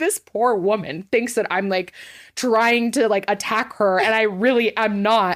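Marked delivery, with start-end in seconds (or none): none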